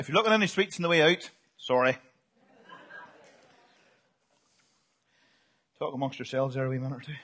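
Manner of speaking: low, soft speech through a full mouth. Addressing everyone in the morning while eating sweets, talking with mouth full. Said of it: "I've got too much chocolate in my mouth".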